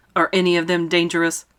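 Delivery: plain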